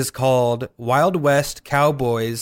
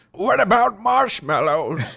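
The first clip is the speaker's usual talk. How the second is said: put-on old man voice, pitched up; 7 semitones higher than usual. Joking with co-hosts about marshmallows, doing a Deckard Cain old man voice. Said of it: "That's my old man voice".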